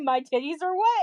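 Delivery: puzzled, rising, questioning tone. Retelling echoing another person's words back: retelling a questioning tone. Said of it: "in, like, a questioning tone".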